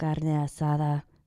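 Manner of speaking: funny deep, soft ASMR-style voice.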